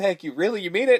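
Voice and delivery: put-on, high, weepy, tearful blubbering. Recounting a favorite movie scene, imitating someone crying. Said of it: "And he starts crying".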